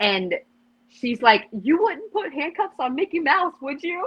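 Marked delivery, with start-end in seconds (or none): 1.5-4.1 shrill, very high-pitched yell. Retelling how a mom confronted an officer: imitating a mom yelling. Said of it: "yelling at the officer".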